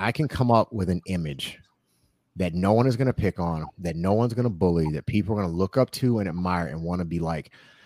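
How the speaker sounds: ordinary delivery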